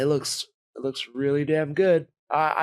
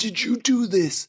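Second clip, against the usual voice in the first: mock scream, higher; 7 semitones higher than usual. Retelling a movie scene where one character confronts another: imitating someone screaming. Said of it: "he's screaming at him".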